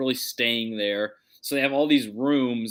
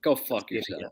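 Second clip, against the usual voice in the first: irritated, upset, grumpy, cranky retort; 3 dB quieter than usual. Answering a question about the streak, upset. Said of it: "Why are you upset?".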